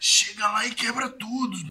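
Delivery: rough, raspy, hoarse voice. Recounting what the man who hired him to play said; imitating a raspy voice. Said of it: "A voz dele é rouca".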